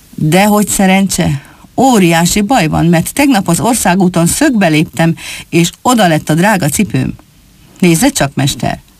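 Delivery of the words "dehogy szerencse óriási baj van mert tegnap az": plain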